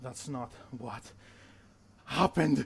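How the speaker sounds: reverberating voice. Narrating a battlefield scene as an unseen voice cuts in: echoing voice. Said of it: "an echoing voice".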